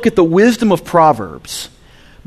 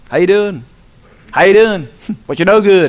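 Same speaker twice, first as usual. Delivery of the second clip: Southern dialect, Tennessee style. Speaker showing how people say what's up in tennessee, southern accent. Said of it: "That's how we talk in Tennessee".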